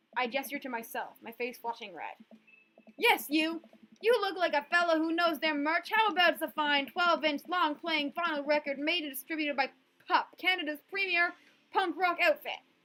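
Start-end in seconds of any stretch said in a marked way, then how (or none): 2.9-12.5 high, shouted hawker's sales-pitch voice. Voicing a teenager hawking merch from a chair: yelling like a merch seller. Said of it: "Please stop yelling at me!".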